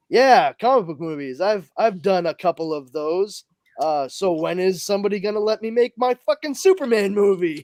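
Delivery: ordinary delivery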